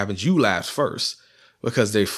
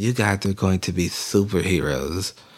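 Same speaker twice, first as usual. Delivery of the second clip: low, dead, utterly flat monotone with no tune; 4 semitones lower than usual. Reviewing a movie, the speaker imitates how she delivers her lines, mimicking her monotone delivery. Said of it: "in the most monotone".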